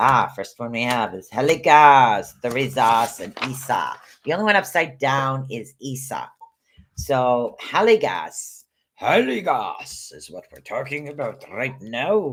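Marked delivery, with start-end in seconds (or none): 7.0-12.3 Scottish accent creeping in, with sing-song swoops. Explaining Heligas to listeners, the speaker's Scottish accent slips out. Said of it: "there goes my my Scottish accent".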